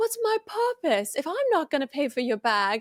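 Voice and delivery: put-on Australian accent, kept going throughout. Retelling the same video, quoting the husband: imitating an Australian accent. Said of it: "your Australian accent".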